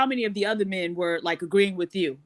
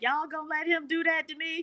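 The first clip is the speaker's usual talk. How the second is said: very high, weepy, whimpering crying voice; 10 semitones higher, 4 dB quieter than usual. Retelling how a man reacted after being hit: imitating someone crying. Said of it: "he was, like, crying, like".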